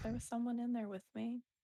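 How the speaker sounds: low-key, understated, confiding tone. Voicing a character telling a companion what happened: speaking quietly. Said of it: "just quietly goes".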